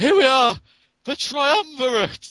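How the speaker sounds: shrill, very high, loud shout. Retelling a character joining three hands together: imitating a yell. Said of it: "kind of just yells".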